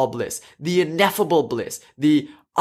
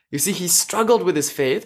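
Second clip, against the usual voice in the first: ordinary talk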